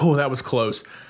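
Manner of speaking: ordinary delivery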